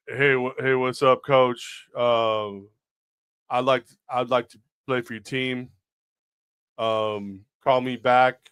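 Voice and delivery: very slow, halting, awkward, fumbling casual delivery. Reenacting for the host a voicemail once left for a coach, reenacting own voicemail. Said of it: "reenact the voicemail I sent you".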